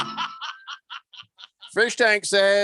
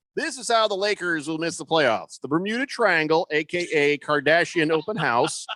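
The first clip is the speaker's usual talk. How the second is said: normal talking voice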